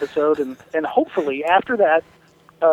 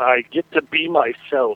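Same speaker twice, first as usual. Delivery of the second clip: stately deep baritone, very slow and drawn out; 4 semitones lower than usual. Retelling a reply from a man who plays a Klingon, in a deep baritone voice. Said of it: "in that baritone voice".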